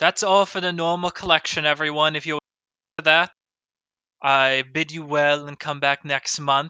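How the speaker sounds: speaking up loudly. Voicing an auctioneer addressing everyone: speaking up loudly. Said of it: "Speaks up".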